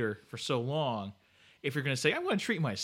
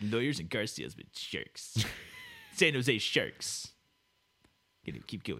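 swooping, put-on made-up shark character voice; 3 semitones lower than usual. Joking about lawyers and car salesmen as sharks: shark voice. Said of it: "What voice is that?".

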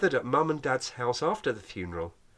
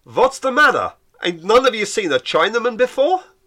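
very loud, high-pitched bellow; 8 semitones higher, 9 dB louder than usual. A father turns to a crowd and delivers a punchline, bellowing to the crowd. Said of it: "He turned to the crowd and bellowed".

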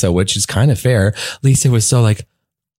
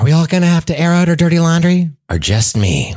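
serious voice with pitch lifted higher; 7 semitones higher than usual. Imitating a reality star when she gets serious after being asked. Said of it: "No, do it".

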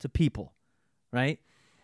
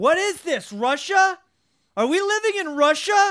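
shrill, loud, fed-up screaming outburst; 7 dB louder than usual. Retelling a man at the Kroger who snapped over the empty shelves: imitating his screaming. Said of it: "he started screaming".

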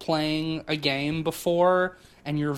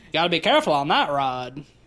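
put-on deep, old-style New England Maine accent; 3 dB louder than usual. Describing the accent a figure should have, demonstrating a Pet Sematary old Maine accent. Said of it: "that kind of accent".

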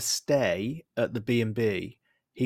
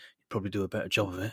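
mock muttering under the breath; 4 semitones lower, 8 dB quieter than usual. Quoting a man's remark to Emma, retelling a mutter under breath. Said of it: "he muttered under his breath".

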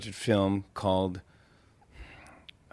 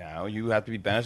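usual speaking voice

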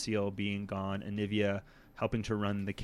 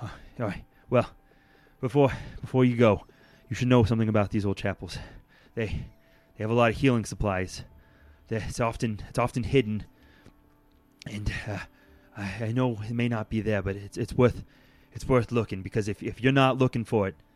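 breathless, winded, louder; 7 dB louder than usual. Voicing a character who stops the party before they leave: out of breath. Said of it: "Aaron stops you, really out of breath".

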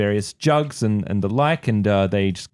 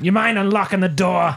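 pitched-up, high cartoon voice; 9 semitones higher than usual. Asking someone to unlock the locked door, attempting a Krusty the Clown voice. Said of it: "This is March Simpson".

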